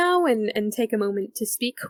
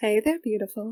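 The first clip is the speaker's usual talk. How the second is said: playful, smiling, flirtatious tone; 2 semitones lower, 4 dB quieter than usual. An elf woman leans in close to greet a player; smiling voice. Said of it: "she leans in and she smiles at you".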